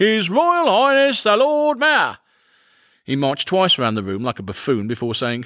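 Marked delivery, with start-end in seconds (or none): 0.0-2.2 rough, coarse, very high, loud bellowing voice. Entering a room without knocking, a man announces himself in a loud, coarse voice. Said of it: "announced himself in a loud, coarse voice".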